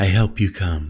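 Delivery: ordinary delivery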